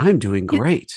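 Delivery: calm, steady, unbothered, even-keeled voice. Describing a brother, the speaker imitates his calm even voice. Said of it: "he'll speak like this the entire time".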